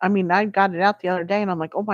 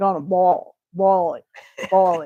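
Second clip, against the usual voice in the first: mock Southern pronunciation. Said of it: "say it like the Southern".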